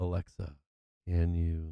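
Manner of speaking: low-pitched, throaty half-whisper. Answering a chat request to half-whisper to alexa: lowered throaty half-whisper. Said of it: "lower my pitch and make it a little throaty like you're whispering".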